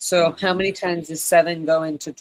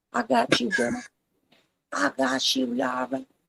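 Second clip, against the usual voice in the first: put-on American vernacular accent, high and creaky; 8 semitones higher, 4 dB quieter than usual.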